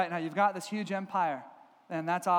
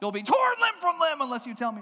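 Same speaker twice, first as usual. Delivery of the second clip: menacing, angry, growing wrath, pitched up; 8 semitones higher, 4 dB louder than usual. Retelling a king who threatens his wise men: imitating an angry threat. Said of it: "he gets angry, and he threatens to kill them".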